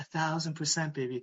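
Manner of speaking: soft, quiet, close-up half-whisper. Retelling waking a worried partner at night: retelling a quiet half-whisper. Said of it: "I quietly whispered in her ear".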